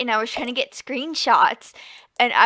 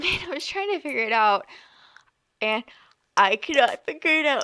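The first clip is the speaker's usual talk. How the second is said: words pushed out while yawning; 4 semitones higher than usual. Explaining being unable to figure out the garden, yawning. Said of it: "sorry, I'm yawning".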